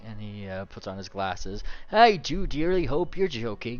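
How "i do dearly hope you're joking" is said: put-on booming, very loud, pitched-up old priest voice. Voicing an old priest who has just put on his glasses: voicing the old priest. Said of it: "he says as he puts on the glasses".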